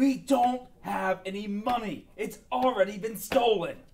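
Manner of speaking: loud, high-pitched character voice, yelling out. In a game scene, someone pinned down protests: in-character yelling. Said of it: "Ye- yelling".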